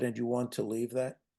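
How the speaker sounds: soft gentle tone. Recounting own words to a woman in a past conversation, retelling a gentle question. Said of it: "in as gentle a voice as I could muster".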